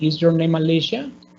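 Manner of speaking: pitch climbs at the end of Alicia. Teaching english question intonation: rising intonation on alicia. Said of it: "Alicia va subiendo la entonación al final".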